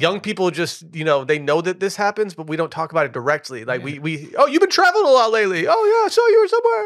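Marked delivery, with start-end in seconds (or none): 3.9-6.9 put-on grandma voice, much higher and louder. Acting out someone who has seen their online posts: grandmother voice. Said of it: "your grandmother has a very grandmother voice".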